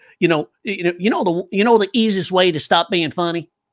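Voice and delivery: put-on stumbling, halting Kentucky accent. Recalling a man from Kentucky who sold the course, imitating a Kentucky accent. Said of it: "That's how he talked".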